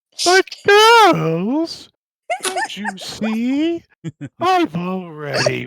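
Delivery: loud booming, swooping, gloating cartoon villain voice, drawn-out see. Friends talking about cartoons, one does the Powerpuff Girls devil; HIM from Powerpuff Girls voice. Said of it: "Where do you think I fucking ate that voice?".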